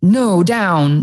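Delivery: acted loud voice. Owner retelling a command to their dog to stay down, retelling a strong raised voice. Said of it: "very, very, you know, strong voice".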